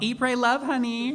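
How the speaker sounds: high, drawn-out, stretched-out in-character holler. Playing a character who yells to the group: yelling in character. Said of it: "And I'm gonna yell".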